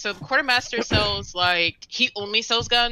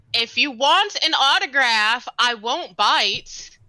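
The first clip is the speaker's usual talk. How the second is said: slow, drawn-out, full-voice hollered shout; 4 semitones higher, 4 dB louder than usual. Retelling what they shouted across to someone, retelling a shout. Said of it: "And I shout".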